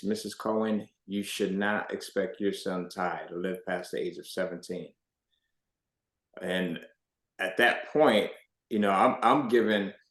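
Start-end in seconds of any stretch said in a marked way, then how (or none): 0.0-4.9 acted quiet, plain, businesslike, matter-of-fact tone. Speaker recalls a hematologist speaking to his mother: retelling a matter-of-fact voice. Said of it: "he says to her in this matter of fact voice".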